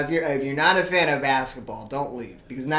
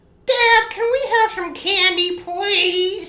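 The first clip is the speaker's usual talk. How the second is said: put-on kid voice, much higher; 7 dB louder than usual. Showing how he sounded as a boy, the speaker uses his little kid voice. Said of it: "It's my little kid voice".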